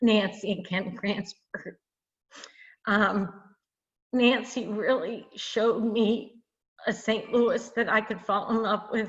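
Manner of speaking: close to tears, choked-up voice catching. Talking about the most important mentors, nancy and ken cransford, about to cry. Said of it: "I'm going to cry now".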